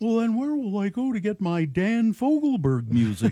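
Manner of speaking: sad, dejected, high cartoon-bear voice. Retelling what a bear at the mall said: hushed Winnie the Pooh voice. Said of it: "said in a hushed tone, his voice sounded like".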